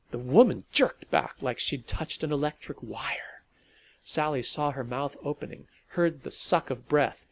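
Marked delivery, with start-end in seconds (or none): none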